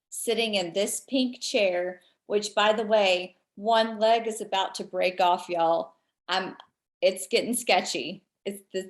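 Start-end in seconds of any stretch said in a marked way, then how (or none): none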